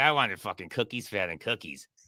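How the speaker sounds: pissed-off, cheated, angry swearing outburst. Imitating a guest annoyed at a quiz answer: imitating someone pissed off. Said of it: "That's why he's making that face".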